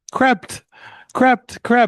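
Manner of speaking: mock very high, fuming, angry outburst on one repeated word. Retelling how an irritated man kept yelling one word, imitating someone screaming. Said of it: "He kept screaming".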